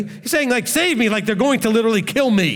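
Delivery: ordinary delivery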